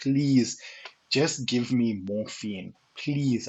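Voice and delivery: slow, earnest, pleading, begging tone. Retelling begging a medic for morphine: imitating himself begging. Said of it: "I'm begging this guy".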